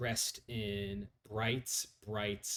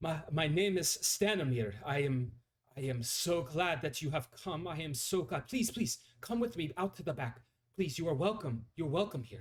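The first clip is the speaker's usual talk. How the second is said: bright, excited, high-pitched and rushed; 7 semitones higher than usual. Narrator voicing Stanimir welcoming visitors to the back, excited Stanimir voice. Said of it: "He's um seems excited for sure".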